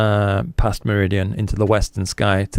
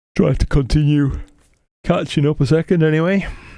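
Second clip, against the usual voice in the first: words stretched through a yawn, pitched up; 6 semitones higher than usual. Speaker struggling with plate solving, talking to viewers: yawning. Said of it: "Sorry for yawning at you".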